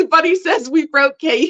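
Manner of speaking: words broken up by laughter. Reading out a comment from the audience, laughing while talking. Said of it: "you guys are making me laugh".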